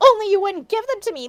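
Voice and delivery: furious, high-pitched angry shout. Reading fan fiction aloud, characters shouting angrily. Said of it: "Lumpkin shouted angrily".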